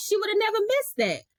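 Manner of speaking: insistent, disbelieving tone.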